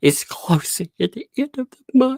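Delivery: mock distressed, upset, very high-pitched voice. Retelling a daughter's bad news about the candy shop: imitating an upset daughter. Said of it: "She was so upset".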